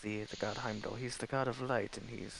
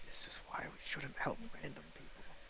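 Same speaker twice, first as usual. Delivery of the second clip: hushed whisper under the breath, leaning in; 5 semitones higher, 5 dB quieter than usual. Riding in a carriage, a character leans over to a companion, whispering. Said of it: "I'm just gonna lean over and like whisper".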